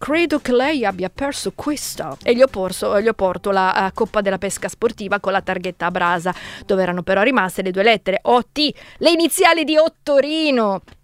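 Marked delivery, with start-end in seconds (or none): 0.0-2.2 put-on slight, faint English accent. Speaking to the man who opens the door, in a slight Sherlock Holmes English accent. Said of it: "con un leggero accento inglese alla Sherlock Holmes".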